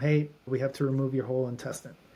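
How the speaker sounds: ordinary delivery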